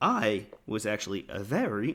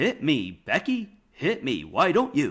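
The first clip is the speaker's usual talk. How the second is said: loud, very slow, drawn-out swooping delivery; 2 semitones higher, 5 dB louder than usual. Retelling a wrestling promo line in a Kenny Omega impression. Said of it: "your impression sounds like Omega".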